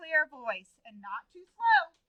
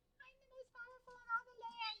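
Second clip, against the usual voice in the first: barely audible, high, squeaky little mouse voice; 7 semitones higher, 22 dB quieter than usual. Acting out a story, a child gives the mouse's line; squeaky mouse voice. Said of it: "give me a mouse voice ... kind of squeaky".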